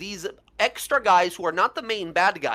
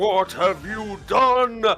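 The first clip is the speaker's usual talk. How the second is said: furious, raging roar; 3 semitones higher, 4 dB louder than usual. Voicing a restrained king who roars back at a spirit: roaring in character. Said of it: "roars back".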